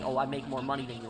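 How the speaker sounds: plain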